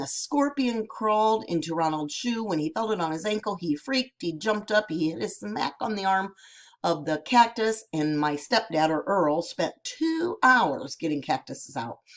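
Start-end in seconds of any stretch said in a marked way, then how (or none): none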